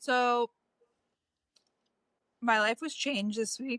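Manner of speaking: voice breaking and cracking with emotion. Podcast co-host starting a new segment, voice cracking with emotion. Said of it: "Your voice just cracked".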